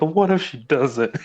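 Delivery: high voice, choked out between sobs. Retelling a scene from a book where a character sobs: imitating sobbing. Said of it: "sobbing, like".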